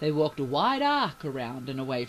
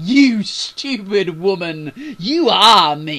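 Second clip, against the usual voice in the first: very loud, very slow, dragged-out mocking tone; 4 semitones higher, 14 dB louder than usual. Narrator reads Mathilde taunting Bailey, mocking. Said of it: "she mocked again".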